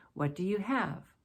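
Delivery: pitch sinks downward on the word "have". Teaching English intonation, reading an example open question with falling intonation. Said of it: "Falling intonation because it's an open".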